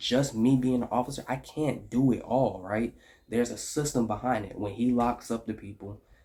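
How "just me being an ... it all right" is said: ordinary talk, nothing marked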